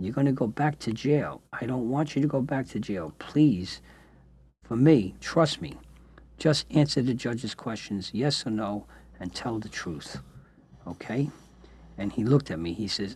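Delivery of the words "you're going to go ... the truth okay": plain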